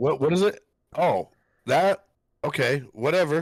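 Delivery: mock irritated, dismissive tone. Acting out to the other person how they answered, imitating someone slightly irritated. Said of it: "a slight irritation in your voice".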